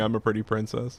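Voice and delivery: ordinary delivery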